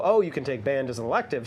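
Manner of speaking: ordinary talk, nothing marked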